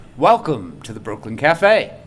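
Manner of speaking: very low, deep radio announcer-style voice. Asked by another speaker to talk into the microphone in a radio voice. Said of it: "talk in your radio voice".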